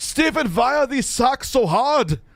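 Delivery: put-on German accent, very high pitched and loud. Retelling how a guy's dad questioned him, german accent. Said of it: "his dad had a German accent too".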